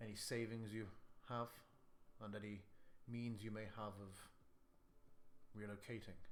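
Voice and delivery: voice dropped a little, confidential. Speaking in character partway through a sentence: lowered voice. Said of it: "I'll sort of lower my voice a little bit".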